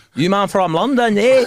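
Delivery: put-on mixed Albanian and Scottish accent. Retelling what a guy asked about London: imitating an Albanian Scottish accent. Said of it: "an Albanian dude with an Albanian Scottish accent".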